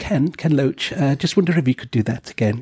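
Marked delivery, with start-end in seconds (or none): 1.2-2.6 mild, easygoing, gentle delivery. Retelling asking someone to do that again, in nice gentle tones. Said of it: "it's just kind of like nice, gentle tones".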